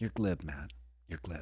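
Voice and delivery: patronizing, condescending, talking-down tone. Retelling an interview where the guest scolds the host: condescending Tom Cruise impression. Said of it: "In the most condescending".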